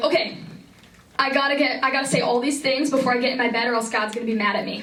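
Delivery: ordinary delivery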